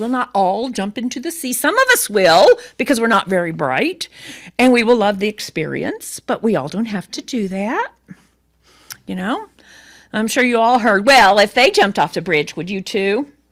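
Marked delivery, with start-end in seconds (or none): 11.4-13.3 put-on motherly voice. A speaker quotes a familiar parental warning, imitating their mother's voice. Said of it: "That's my mother's voice".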